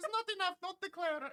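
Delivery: put-on very high-pitched grandma voice. Retelling what the grandma said about declaring streaming money: imitating a grandma. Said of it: "such a good, like, impression of your grandma".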